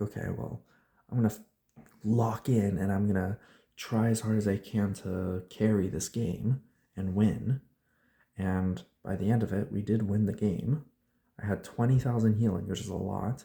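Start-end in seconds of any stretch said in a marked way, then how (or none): none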